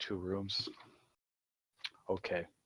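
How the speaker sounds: glum, sad, sorry-sounding, downcast voice. Game master voicing Eric as a player asks for two rooms, sad voice. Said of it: "Why do you sound so sad".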